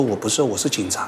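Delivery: plain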